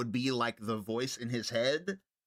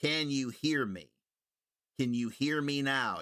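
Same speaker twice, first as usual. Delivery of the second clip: put-on stilted, unnatural, robotic speech. Imitating how the diver talked: stilted, unnatural delivery. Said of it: "he spoke in such a stilted way".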